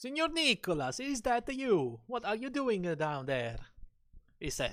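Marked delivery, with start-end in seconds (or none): 0.0-3.6 put-on Italian accent, pitched up, calling out. Recalling what a man said about a name, the speaker quotes him: italian impression. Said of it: "Did you like my Italian impression?".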